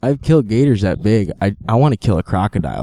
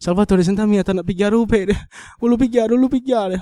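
mock sobbing speech in Italian, much higher pitch; 12 semitones higher than usual. Retelling his mom's reaction to him maybe losing his foot, imitating mom crying in italian. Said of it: "So she was crying up a storm".

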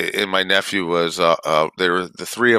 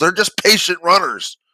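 very high-pitched loud yelling; 11 semitones higher, 4 dB louder than usual. Retelling how a dad yelled to the coach at practice: imitating a dad yelling to a coach. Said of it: "the dad yells to the coach, he goes".

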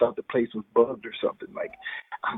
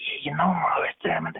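put-on little whispery voice. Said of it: "he went to this little voice that he'd do".

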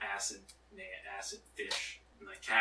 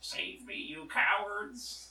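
very high-pitched put-on country twang cry; 12 semitones higher than usual. A player's character screams after the scattering group, in a country accent. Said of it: "He has a country accent now".

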